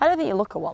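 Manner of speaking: dry, teasing, mocking sarcastic tone. Telling the other speaker they don't look silly: sarcastic. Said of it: "That was so sarcastic".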